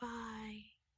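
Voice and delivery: put-on fading-out delivery. Teasing the other speaker about outros, imitating a fading-out goodbye. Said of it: "Just like".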